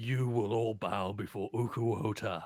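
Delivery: monstrous, commanding creature voice. Voicing a creature that rears up out of the water; thunderous creature voice. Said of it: "a thunderous voice comes out of the creature".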